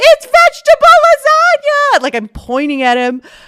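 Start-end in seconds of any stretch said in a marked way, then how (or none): 0.0-2.0 blurted yell, very loud and high-pitched. Retelling spotting someone in a restaurant: retelling a shout. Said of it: "I shout across the restaurant".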